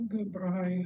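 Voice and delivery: speaking very quietly, low volume. Answering a greeting from another speaker, speaking very quietly. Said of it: "you're very quiet".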